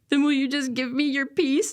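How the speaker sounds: acted weeping, high-pitched, tearful pleading voice. Retelling praying while crying on a trip to Guatemala, retelling a tearful plea. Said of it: "I'm still crying".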